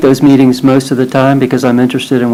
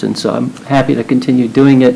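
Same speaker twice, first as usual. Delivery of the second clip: normal talking voice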